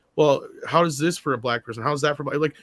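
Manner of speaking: normal talking voice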